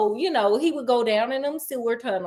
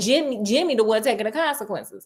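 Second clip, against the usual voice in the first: ordinary talk, nothing marked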